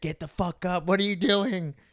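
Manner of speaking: acted raging scream. Describing raging at a video game, retelling screaming at his game character. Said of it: "I'm screaming at my game character".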